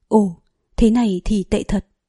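ordinary delivery

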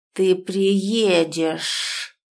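sinister, ominous, drawn-out hissing voice. Reading a story, the narrator voices the caller through the phone: sinister hiss. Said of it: "Зловеще прошипели динамики смартфона".

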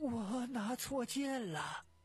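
high, shaking, quavering, trembling voice. A narrator reads a character's words to an officer, in a trembling voice. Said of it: "声音颤抖着".

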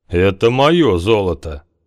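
ominous, menacing voice boding nothing good. The guest answering Havar, in an ominous voice. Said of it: "голосом, не предвещающим ничего хорошего".

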